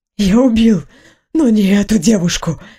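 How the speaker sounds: hoarse, raspy, croaky whisper. A defendant answers his questioner's demand, hoarse whisper. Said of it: "хрипло прошептал он".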